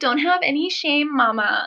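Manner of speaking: very slow, high put-on woman's voice. Quoting what a lady wrote to her, doing her voice: imitating a lady's voice. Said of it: "sorry, I'm doing her voice".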